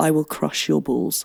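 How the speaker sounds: sinister. Recording a take at the other speaker's request, say the line in a sinister way. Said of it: "That felt sinister".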